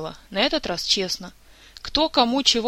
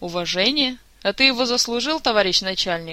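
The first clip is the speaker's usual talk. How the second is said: plain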